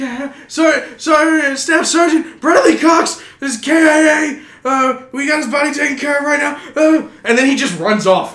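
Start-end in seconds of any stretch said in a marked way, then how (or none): 0.5-6.6 put-on panting voice, higher and louder. Retelling how the other medic reported while out of breath: imitating Morowski panting. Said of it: "He's panting".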